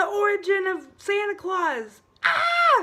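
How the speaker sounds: very high, giddy, thrilled voice with swooping pitch. Announcing today's topic to viewers after a drum roll, really excited. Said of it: "I get really, really excited sometimes".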